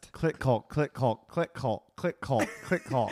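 rapid, rattled-off repetition at speed. Taking up a tongue-twister challenge, he repeats the phrase five times: fast repetition. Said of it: "Say that 5 times fast".

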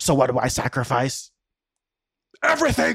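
put-on Swedish accent. Performing a monologue for listeners, in a Stellan accent impression. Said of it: "I'm going to try to perform it with my best Stellan accent".

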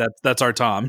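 ordinary talk, nothing marked

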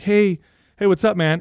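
deliberately relaxed, super calm, casual put-on tone. Retelling calling someone on the phone while staying calm: imitating own super calm voice. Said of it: "super calm".

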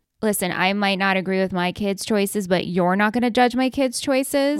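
ordinary talk, nothing marked

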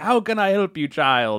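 thick, heavy, put-on Jamaican accent. Acting out a call to a psychic hotline: imitating Miss Cleo's thick accent. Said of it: "someone's pretending to be Miss Cleo".

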